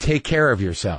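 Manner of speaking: imitated loaded tone. Retelling what he said as the speaker walked out, imitating a loaded tone. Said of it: "That sounded loaded to me".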